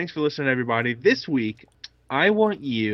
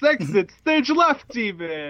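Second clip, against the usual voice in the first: cartoon lion voice, much higher; 9 semitones higher than usual. A podcast co-host jokes about quitting the show, then adds a line in Snagglepuss voice. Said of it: "I just sounded like Snagglepuss".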